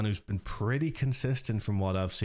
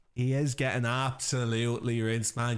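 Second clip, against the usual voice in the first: half-convincing put-on Dublin Irish accent; 2 semitones higher than usual. Repeating another player's complaint about getting rinsed: put-on Dublin accent. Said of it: "Dublin accent, I'm very fifty fifty on".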